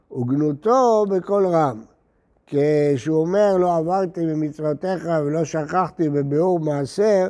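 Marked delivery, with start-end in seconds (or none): none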